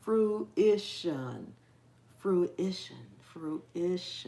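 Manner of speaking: each syllable of fruition slowly, carefully drawn out. Practising a word that is hard to pronounce: saying it slowly. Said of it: "I have to say it slowly".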